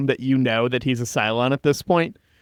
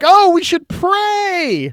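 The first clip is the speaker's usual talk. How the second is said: snide mocking voice, very high and drawn out; 6 dB louder than usual. Retelling how Cavill shows up on Caprica: mocking Cavill voice. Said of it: "being his mocking asshole self".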